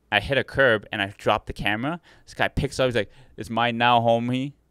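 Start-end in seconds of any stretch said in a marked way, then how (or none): 3.3-4.5 casual, put-on Mexican accent. Retelling what an employee said after grabbing the dropped camera: imitating a Mexican accent. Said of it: "in a Mexican accent".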